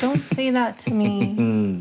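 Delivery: mock wimpy whine, slow sing-song, "me" dragged out. Describing how she berated them, mimicking her whiny, wimpy voice. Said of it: "Just a whiny, wimpy voice of like".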